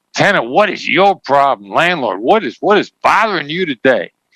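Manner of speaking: pointed, blaming tone. Showing a negative mindset, the speaker questions a tenant and a landlord, accusatory tone. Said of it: "you can tell from my tone of voice, it's accusatory".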